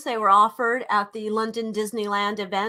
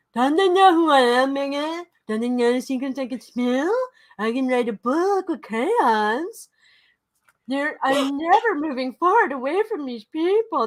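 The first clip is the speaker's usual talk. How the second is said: mock dumb-sounding voice, pitched higher; 4 semitones higher than usual. Imitating a man annoyed about an event: mocking dumb voice. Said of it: "He talks like a dummy".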